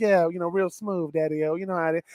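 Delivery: low, soft, smooth Mississippi voice. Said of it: "that's the Mississippi smooth voice".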